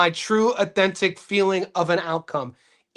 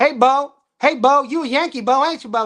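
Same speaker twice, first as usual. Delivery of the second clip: put-on rural country accent, pitched up; 6 semitones higher than usual. Speaker from the north retelling how others talked to him, in a fake country accent. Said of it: "That's how they would talk to me".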